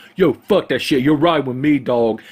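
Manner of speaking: mocking put-on impression voice. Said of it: "my very flattering impression of [name]".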